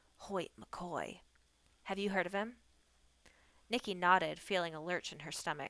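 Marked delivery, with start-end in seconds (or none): 0.2-2.5 gruesome, creepy whisper, quieter. Reading a story aloud, a boy teasing a girl: gruesome whisper. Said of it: "lowered his voice to a gruesome whisper".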